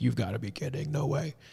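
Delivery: put-on high, laughing, incredulous dismissive tone. Retelling a doctor's reaction on the phone: imitating a doctor laughing. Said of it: "laughing at me".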